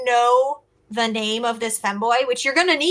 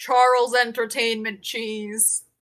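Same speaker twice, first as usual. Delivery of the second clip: very deep put-on character voice, dropped way down; 2 semitones lower than usual. In a playful marriage role-play, answering a whispered question in a very deep voice. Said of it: "Very deep voice".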